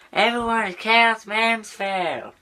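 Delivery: very high-pitched cartoon schoolkid voice. Showing a Cartman from South Park impression: Cartman voice. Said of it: "This guy is Cartman from South Park".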